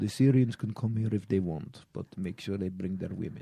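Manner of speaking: fake Russian accent, dropped low and deep. Asked to do accents, the speaker shows off a mock Russian accent. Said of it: "this is Russian right there".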